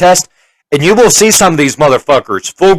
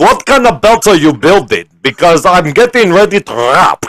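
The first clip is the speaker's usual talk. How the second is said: put-on heavy Russian accent, laid on very thick. Recounting what a woman said to the speaker, in a thick Russian accent. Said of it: "she had the thickest Russian accent".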